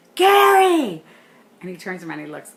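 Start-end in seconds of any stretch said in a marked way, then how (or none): 0.2-1.1 shrill, very loud, high, long-held drawn-out scream. Recounting calling back a manager walking away, retelling screaming his name. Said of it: "I'm screaming at him".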